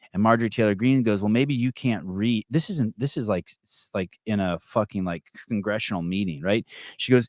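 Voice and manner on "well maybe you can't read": normal talking voice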